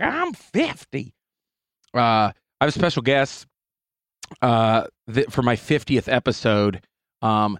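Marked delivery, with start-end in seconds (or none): 0.0-1.1 put-on very high-pitched old lady voice. Marking episode fifty by quoting an old lady sketch: Molly Shannon old lady voice. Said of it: "I just hear Molly Shannon when she's that old lady on Saturday Night Live".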